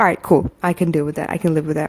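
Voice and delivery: ordinary talk, nothing marked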